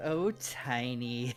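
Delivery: amused smile heard in voice. Voicing a woman reading a note and smiling: smiling, amused. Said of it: "She kind of smiles like".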